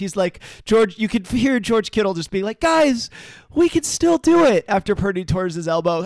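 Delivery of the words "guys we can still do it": play-acted earnest, hopeful, very high, slow, drawn out. Retelling a player's words after the quarterback's injury: imitating hopeful George Kittle. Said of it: "Just so much hope in his voice".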